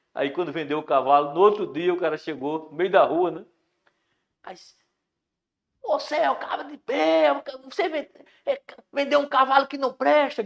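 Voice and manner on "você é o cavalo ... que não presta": very high, shrill, high-pitched yelling voice. Retelling how the buyer came back shouting at the horse seller, retelling a shout.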